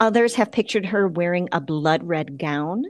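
ordinary delivery

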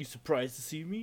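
smug, cocky, taunting, self-assured tone. Retelling a scene, imitating Goku asking cockily. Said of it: "Goku's cockily asks him".

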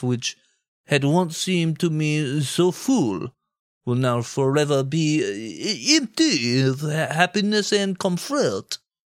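deliberately bad, silly put-on French accent. Reading out a Frenchman's quote to make a joke of it, in a stupid fake French accent. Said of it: "do my stupid accent through his meaningful quotes".

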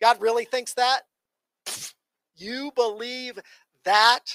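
put-on scornful, mocking tone. Acting out the serpent's words in the garden: put-on mocking tone. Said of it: "it carries with it in the Hebrew a mocking tone".

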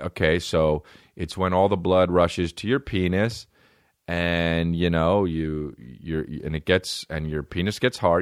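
ordinary delivery

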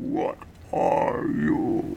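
odd put-on beast voice, rough and creaky. Game master voicing a creature that gives the players a curious look: creature voice. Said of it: "Let's see if I can do this voice".

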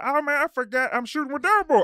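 very high voice. Retelling a message from Precious, imitating Precious's voice. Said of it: "I love doing her voice".

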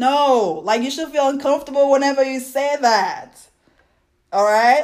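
high-pitched frustrated outburst. Speaker gets frustrated while making a point to listeners, raised voice. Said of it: "I don't mean to raise my voice".

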